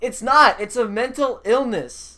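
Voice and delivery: insistent, repeated, hammering shouted delivery. Insisting repeatedly on your point to the listener, yelling. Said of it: "I- am sorry for yelling".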